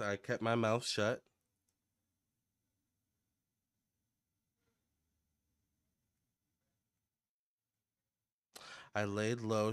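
acted humble, meek, self-lowering delivery. Retelling what a woman said about herself, imitating her meek voice. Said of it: "puts herself in a meek position".

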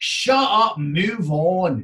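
very drawn-out, clumsy, bad Scottish accent. Retelling what a workshop participant said: poor Scottish accent. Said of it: "which if you're Scottish, I do apologise for. Don't sue me for the poor accent".

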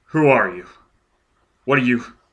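unsteady, shaking, trembling voice with a quiver. Paralyzed before an apparition of himself, a man takes a breath and speaks: shaking voice. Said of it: "spoke in a shaking voice".

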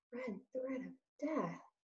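in a small voice. Narrator reads a mouse repeating a terrible phrase, small voice. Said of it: "repeated Despereaux in a small voice".

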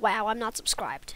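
ordinary talk

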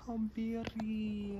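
put-on high, slow, cooing baby talk.

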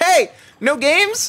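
very high, loud, excited scream. Retelling what a stranger at a theme park screamed: imitating someone screaming. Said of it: "somebody screamed that at me and was like".

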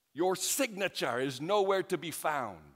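high, loud traffic-cop style shout. Recounting a stop over a license, quoting the officer, retelling an officer shouting. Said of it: "he shouted".

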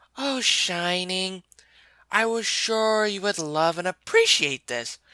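sweetly kind, caring voice, slightly high. Reading her reply after Shining threatens to tell someone, sweet, kind and caring. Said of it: "She still smiled sweetly, her voice forever kind and caring".

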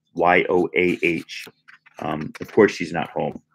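plain reading voice

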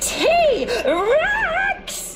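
piercing, very high-pitched shriek. Olivia spots a T-Rex and runs for a cave, shrieking. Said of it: "shrieked Oliver".

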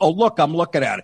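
normal talking voice

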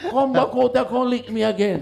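put-on, very high-pitched, furious, enraged voice. Retelling a challenge shouted at a stepfather: imitating an enraged threat. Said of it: "went outside in a rage".

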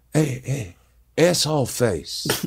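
hushed stage whisper. Retelling filming from behind a guy's head, the speaker re-enacts half-whispering to him. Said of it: "I'm whispering".

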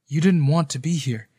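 ordinary talk

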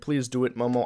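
ordinary delivery

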